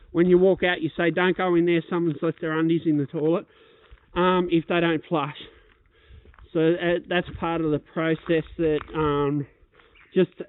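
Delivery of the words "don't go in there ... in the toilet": ordinary talk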